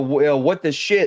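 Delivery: normal talking voice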